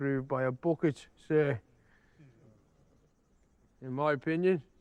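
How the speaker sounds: put-on slurring drunkenly. Asked by a superior about the new beret, a subordinate answers, drunk. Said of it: "You're drunk as hell".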